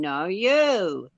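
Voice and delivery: put-on New Zealand accent. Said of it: "with a New Zealand accent going".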